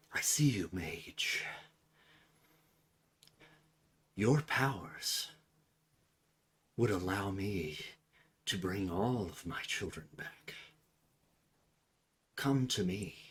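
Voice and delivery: soft, hushed half-whisper, very close. Game master voices a figure speaking into a player character's ear, half-whispering. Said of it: "you hear whispered into your ear".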